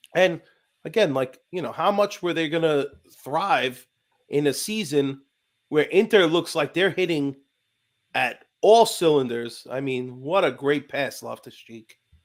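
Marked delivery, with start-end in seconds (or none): 10.3-12.0 sarcastic, mocking praising tone. Commenting on a player's pass while watching the match: sarcastic. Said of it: "And that's completely sarcastic".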